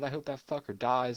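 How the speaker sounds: ordinary talk, nothing marked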